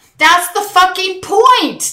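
very high, shrill, drawn-out screaming yell. Retelling shouting at a speaker while delegates booed: retelling own scream. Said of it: "I screamed at him".

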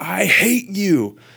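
high, slow, loud scream at full volume.

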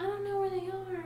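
very high, squeaked-up put-on woman's voice. Retelling what Carla kept saying, done as a Carla impression. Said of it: "that is my impression".

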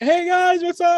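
very high, drawn-out, fake-friendly, overly nice voice. Imitating the other speaker greeting neighbours: imitating fake super-nice greeting. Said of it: "being super fucking nice".

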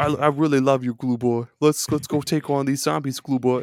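put-on Boston accent. Retelling another player in a zombie game, near-boston accent impression. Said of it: "had like a Boston accent almost".

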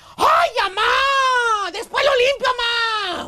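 put-on slow whine, drawn-out "mamá". Retelling how a gaming son answered his mom's request to clean, mock whiny yelling at mom. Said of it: "Le gritaba a su mamá".

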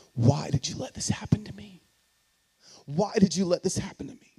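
play-acted furious, accusing cry projected upward. Retelling losing ministry and jobs, shaking a fist; reenacted anger at God. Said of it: "I'm shaking my fist at God".

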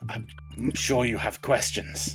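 muffled mask voice. Staring down at a stopped newcomer, a masked woman speaks, Saw-style modulated mask voice. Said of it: "in this kind of this modulated voice, like it's coming through this mask".

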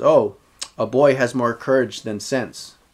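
usual speaking voice

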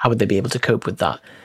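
ordinary talk, nothing marked

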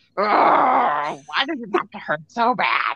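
mock pained groaning through gritted teeth. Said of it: "just gritting my teeth".

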